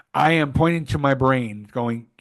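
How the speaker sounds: ordinary talk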